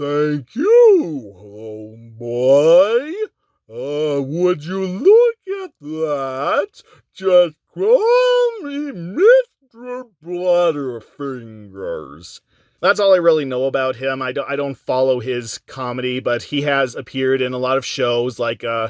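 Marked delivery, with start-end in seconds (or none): 0.0-12.4 slow, swooping, drawn-out falsetto. Quoting a comedian's movie cameo: Emo Phillips falsetto voice. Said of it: "mostly famous for his falsetto voice".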